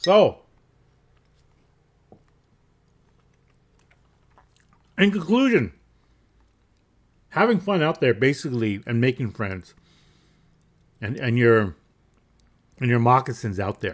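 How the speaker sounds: talking while chewing, mouth full. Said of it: "I have something in my mouth".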